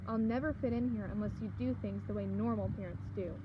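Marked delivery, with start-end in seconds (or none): none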